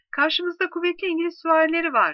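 high, sudden shout.

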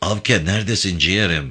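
ordinary delivery

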